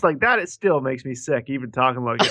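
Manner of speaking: normal talking voice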